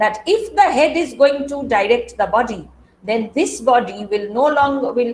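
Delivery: ordinary delivery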